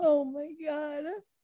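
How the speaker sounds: helpless high cry-laughing outburst. Reacting to a funny movie scene with another speaker: laughing to tears. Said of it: "cry laughing right now".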